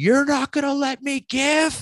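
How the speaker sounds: very high-pitched, shrieking, screamed outburst. Retelling a church service where an old lady stands up: retelling a scream. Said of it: "she screams out".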